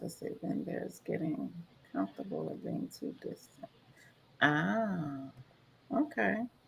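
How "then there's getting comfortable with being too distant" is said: read quietly under the breath. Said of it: "I'm reading her comment".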